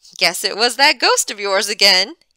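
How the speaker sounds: cheery, upbeat, breezy tone. A man replies to Mrs. Unger's denial, cheerful. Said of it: "he said cheerfully".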